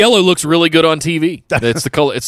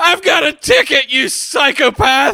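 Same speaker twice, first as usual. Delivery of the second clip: very high-pitched, tearful, crying, emotional voice; 10 semitones higher than usual. Recounting a favorite moment, Jericho held back with his ticket in his hand, imitating Jericho crying. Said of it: "emotional, crying with his ticket in his hand".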